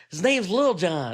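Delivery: high, slow drawl, every word drawn out.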